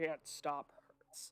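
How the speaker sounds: low, heavy, plodding, halting broken speech. Game master voices someone speaking broken Dwarvish, trying to hold back: low, lumbering voice. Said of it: "It's like low and lumbering".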